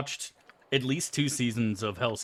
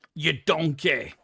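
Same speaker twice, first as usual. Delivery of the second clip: put-on angry chef shout, pitched higher; 3 semitones higher, 4 dB louder than usual. Doing an impression after praising another TV chef: Gordon Ramsay impression. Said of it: "Gordon Ramsay impression".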